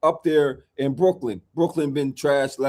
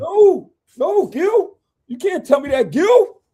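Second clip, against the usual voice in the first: mock, very high, close to sobbing; 5 dB louder than usual. Speaker arguing with Gil about a Cavs game, sounding like crying. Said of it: "he sound like he crying".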